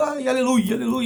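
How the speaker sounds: very high-pitched shouting. Retelling a celebration, imitating Michelle Bolsonaro shouting hallelujah.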